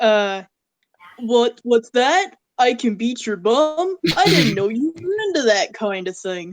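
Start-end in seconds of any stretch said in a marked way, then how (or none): 1.2-6.5 cheesy, crappy, bad anime dub line reading. Quoting a favorite line from a crappy old dub: quoting a crappy JoJo dub. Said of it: "my favorite quote from any dub".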